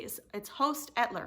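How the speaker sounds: firm delivery with a falling tune.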